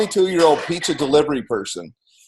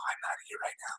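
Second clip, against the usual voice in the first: rushed, fast, hushed whisper under the breath. Recounting a business phone call and overhearing whispering: retelling a whisper. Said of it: "So I hear like this whispering".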